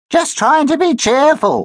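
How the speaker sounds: silly, high-pitched voice. Danny, grumbling at summer camp, mimics Josh in a silly high voice. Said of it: "mimicked Danny in a silly high voice".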